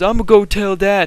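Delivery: mock crying in a high, tearful voice. Retelling how a bleeding buddy started crying, imitating someone crying. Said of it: "he starts crying and he says".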